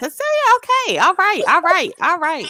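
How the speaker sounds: very high-pitched, sing-song, swooping mom voice. Imitating a mother reacting to her daughter: imitating mom's voice. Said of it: "That's her, in her voice".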